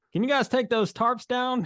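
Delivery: put-on slight country accent. Mimicking the listener's own voice while retelling his words, in a mock country accent. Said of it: "You're trying to add a little country accent to it".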